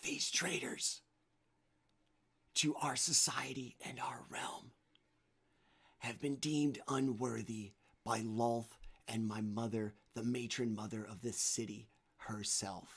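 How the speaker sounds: loud stage whisper, projected to carry. Narrating a story, a character's magically amplified voice addresses the city: loud whisper. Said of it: "it still comes across as a loud whisper".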